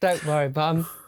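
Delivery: mock dry, flat, expressionless deadpan delivery. Quoting a boy's line from a clip, imitating his deadpan voice. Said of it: "I absolutely love his deadpan voice".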